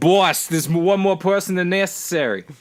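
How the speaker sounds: high-pitched fake Australian accent. Voicing an assistant talking in someone's ear, in a put-on australian accent. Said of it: "then he went Australian somehow".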